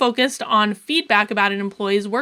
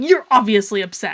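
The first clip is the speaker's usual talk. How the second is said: put-on very angry, accusing tone; 3 dB louder than usual. Retelling a boss's words in her office: imitating an angry tone. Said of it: "a really angry, like, tone of voice".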